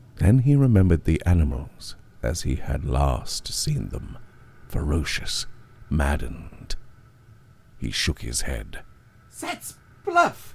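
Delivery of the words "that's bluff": trembling, shaky, very high-pitched voice. A man answers a threat of being forced into a cage; shaky. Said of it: "he said shakily".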